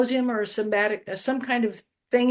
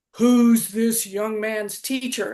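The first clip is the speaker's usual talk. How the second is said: big, deep put-on voice. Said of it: "I heard this big, deep voice".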